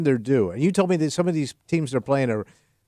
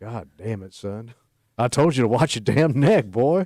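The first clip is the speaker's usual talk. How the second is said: put-on full Texas accent; 3 semitones lower than usual. Reacting to the Bills game in a Texas voice. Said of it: "I'm using my Texas voice".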